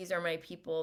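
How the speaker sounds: ordinary delivery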